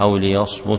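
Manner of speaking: ordinary talk, nothing marked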